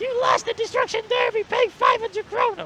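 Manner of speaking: loud, very high puppet-style voice. Joking that Elmo comes knocking at the door over an unpaid bill; Elmo voice. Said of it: "I don't know what sort of voice that was".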